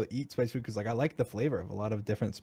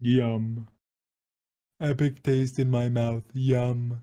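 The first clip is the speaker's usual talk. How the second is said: fake yawn while talking; 2 semitones higher, 4 dB louder than usual. Mocking the other speaker's yawning, mock yawning. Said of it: "are you making fun of me yawning".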